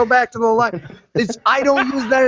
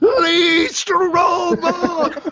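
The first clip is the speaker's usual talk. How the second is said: high, loud shouted call; 7 semitones higher than usual. Retelling standing up in a theater, imitating own scream. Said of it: "screamed at the top of my voice".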